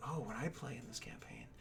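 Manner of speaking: soft, whispered aside.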